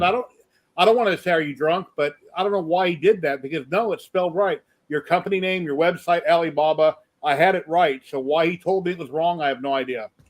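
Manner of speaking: plain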